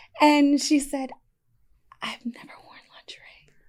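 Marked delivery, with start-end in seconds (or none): 2.0-3.5 put-on whisper, higher and quieter. Retelling what a best friend said at a boudoir photo shoot, imitating a whisper. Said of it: "she was whispering at me".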